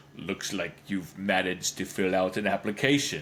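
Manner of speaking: deep, menacing, brooding, foreboding evil-monk voice. Retelling what the evil monk at the front door says, in a put-on deep menacing voice. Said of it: "in a deep and menacing voice".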